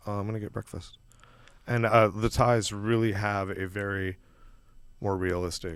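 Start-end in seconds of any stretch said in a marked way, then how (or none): 0.1-1.0 very soft, very quiet, zen-calm reply. Retelling a Thai man's reply while everyone freaked out: imitating someone speaking very calmly. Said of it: "he said it very calmly".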